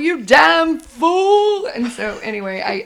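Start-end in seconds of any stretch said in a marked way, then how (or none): 0.0-1.7 loud, grand, theatrical delivery, fool drawn out. Quoting Betty scolding Barney: theatrical imitation of Betty. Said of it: "so theatrical".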